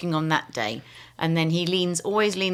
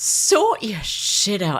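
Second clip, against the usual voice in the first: very slow, drawn-out, fed-up, exasperated tone; 3 semitones higher, 4 dB louder than usual. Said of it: "In a very exasperated tone".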